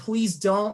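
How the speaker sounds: tearful, crying, sobbing through the words. Retelling what she said while crying: imitating someone crying and sobbing. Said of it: "she starts crying and sobbing and saying".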